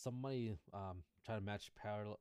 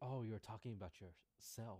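put-on literal deadpan delivery; 3 dB quieter than usual. Speaker quotes a character's literal reply, imitating deadpan delivery. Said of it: "literal and just deadpan".

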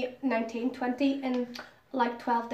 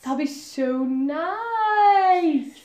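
eerie ghostly voice, drawn out; 4 semitones higher than usual. Podcast host agreeing to pray at the end of episodes, ghostly voice. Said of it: "You sounded like a ghost there".

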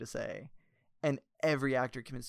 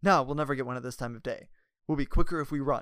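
put-on deadpan delivery, louder; 6 dB louder than usual. Retelling a scene where Robin suggests a taxi, imitating Batman's deadpan reply. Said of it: "Batman deadpan goes".

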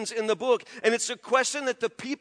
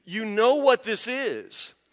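usual speaking voice

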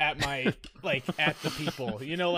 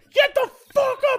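mock yelling, higher and louder; 9 dB louder than usual. Imagining leading a metal Peloton class, urging riders: pretend screaming at the class. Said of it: "I would just be screaming at these people".

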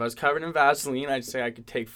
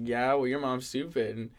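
put-on sassy little kid voice; 3 dB quieter than usual. Acting out a kid taunting in a fight: imitating a sassy little kid. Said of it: "some sassy little kid".

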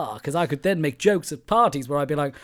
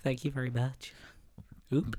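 very soft, breathy, sexy voice; 3 semitones lower, 13 dB quieter than usual. Answering someone who has just apologised for how the world treated you, breathy, sexy Marilyn Monroe voice. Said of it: "I'm all breathy, like sexy".

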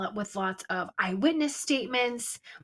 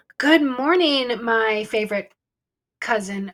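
hesitant, raised tone with a hitch at the start; 8 dB louder than usual. Returning a morning greeting, hesitant. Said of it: "You hesitated".

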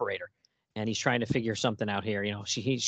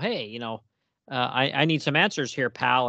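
normal talking voice

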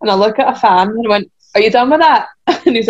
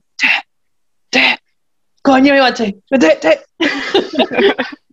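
coaxing, tempting little voice urging on; 3 semitones higher than usual. Playing the little voice in everybody's head: little voice in your head urging. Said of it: "that little voice in the back of everybody's head going".

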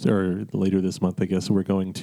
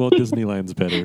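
usual speaking voice

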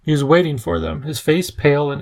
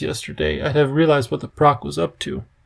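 ordinary delivery

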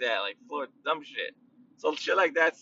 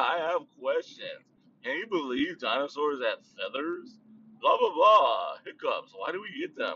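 TV newscaster, on-air news anchor delivery. Imitating the host of a podcast like their own, news anchor voice. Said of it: "He has a news anchor voice too".

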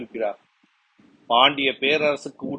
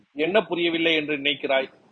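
ordinary delivery

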